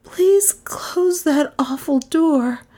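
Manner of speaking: high, trembling, shaken, tremulous voice. A narrator reads a shuddering woman speaking to the detective, tremulous voice. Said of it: "she said in a tremulous voice".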